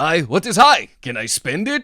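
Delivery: put-on loud, swooping, sing-song belted European accent. Retelling the landlord's first exchange with a tenant: Mr. Ditkovich's weird European accent. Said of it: "he's like weird European accent".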